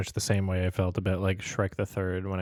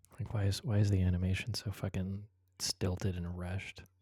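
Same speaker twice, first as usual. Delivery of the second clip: hushed whisper, quieter; 5 dB quieter than usual. Criticizing the animation's pacing without ruining it for another viewer: whispering. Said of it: "so I'm gonna whisper this".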